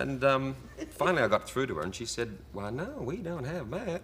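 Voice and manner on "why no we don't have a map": put-on weird, high, twangy American accent. Retelling a woman's reply when asked for a map, imitating a twangy accent. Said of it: "her accent was so weird and twangy".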